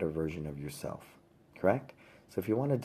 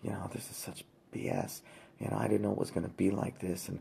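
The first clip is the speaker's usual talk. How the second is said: mock under-breath muttering, quieter and slower; 4 dB quieter than usual. Retelling a dad on the phone with his wife, imitating muttering under breath. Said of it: "talking under his breath going".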